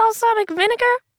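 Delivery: very high, furry puppet voice. Quoting Elmo from a cooking bit on a show, in Elmo voice. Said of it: "And he's like".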